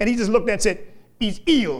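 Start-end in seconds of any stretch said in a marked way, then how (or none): 1.2-1.8 put-on heavy, thick Welsh accent. Retelling a healer's reply to a woman: Smith Wigglesworth heavy Welsh accent. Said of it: "had a very heavy Welsh accent".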